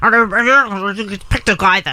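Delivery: slow, marble-mouthed put-on impression voice.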